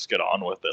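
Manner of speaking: mock mutter under breath. Retelling how a man reacted, retelling a mutter under breath. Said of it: "Under his breath".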